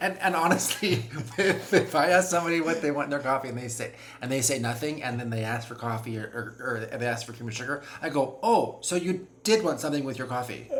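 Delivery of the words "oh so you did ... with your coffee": put-on pointed, scolding, shaming tone. Speaker retelling what they say to people who ask for cream after all, mock shaming tone. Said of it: "I kind of shame them".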